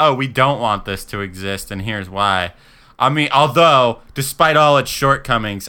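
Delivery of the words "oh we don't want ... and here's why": ordinary talk, nothing marked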